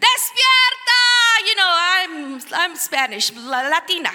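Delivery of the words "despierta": wild, crazed, high-pitched, loud maniac scream. Retelling standing alone on a platform over Denver: retelling screaming like a maniac. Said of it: "I just start screaming like a crazy woman maniac".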